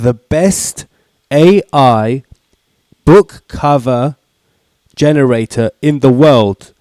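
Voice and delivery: very slow, halting, broken up mid-phrase. Opening a video intro, very slow. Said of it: "I said that really slowly".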